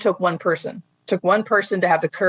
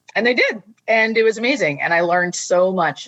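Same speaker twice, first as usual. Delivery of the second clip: ordinary talk, nothing marked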